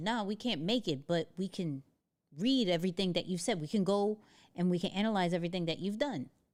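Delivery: ordinary delivery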